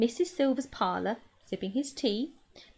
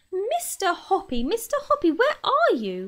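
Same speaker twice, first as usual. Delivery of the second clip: shrill, eager, drawn-out shout with swooping pitch; 9 semitones higher, 5 dB louder than usual. Calling from below for a man, she shouts, shrill with excitement. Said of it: "She was shouting".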